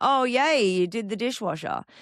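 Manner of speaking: dripping passive-aggressive sarcasm in a high tone. Showing an example of contempt toward a partner: demonstrating sarcasm. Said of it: "sometimes it is sarcasm".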